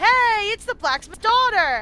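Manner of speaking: loud, high-pitched, slow, excited calling out.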